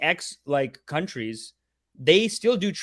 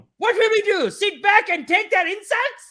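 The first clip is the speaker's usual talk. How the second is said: put-on fast, yelling news anchor voice, higher; 4 dB louder than usual. Retelling how a Republic TV anchor opens a show: imitating a yelling fast news anchor. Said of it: "He's, like, yelling and, like, ripping at it".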